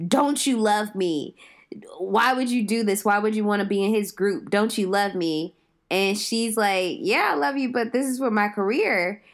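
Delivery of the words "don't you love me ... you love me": put-on, acted-out mock yelling. Recounting a movie scene, the speaker acts out a man's outburst, retelling a character yelling. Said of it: "he starts yelling like".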